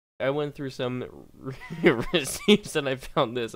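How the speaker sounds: laughing through the words. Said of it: "I'm still laughing about that".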